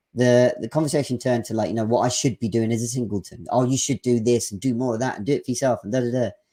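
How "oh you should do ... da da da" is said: ordinary talk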